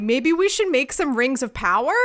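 normal talking voice

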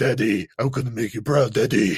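kid talking in a put-on grown deep voice. Recapping a show, a boy runs up to his dad: child with a deep voice. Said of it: "has a voice deeper than mine".

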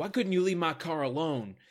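put-on strong high Texan accent. Quoting a line that Jill says in the episode: Jill's Texan accent. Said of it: "her Texan accent really comes out there".

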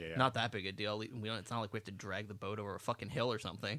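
muttering under breath. Retelling a story, the speaker quotes a man, retold mutter under his breath. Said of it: "he mutters under his breath".

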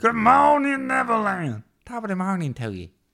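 very high-pitched pirate voice. Redoing the greeting line after being asked to go again, in Smee voice. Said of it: "this is when Smee met the leprechaun".

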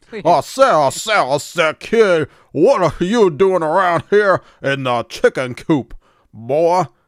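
very loud, high cartoon rooster bellow. Trying again at a cartoon voice, doing a Foghorn Leghorn impression. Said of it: "I like Foghorn Leghorn".

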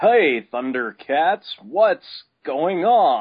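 loud, drawn out big, with a swooping pitch. Guessing what directors told the voice actor, imitating Larry Kenny's Lion-O voice. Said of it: "that voice you used to do where you went".

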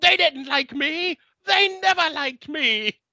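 acted wailing and crying, very high sobbing scream. Retelling a scene where Riff Raff breaks down, imitating Riff Raff screaming, crying. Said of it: "screaming and crying".

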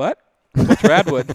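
very loud, blunt deadpan. Retelling own answer to a stranger in a bathroom: imitating a deadpan reply. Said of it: "with a dead face".

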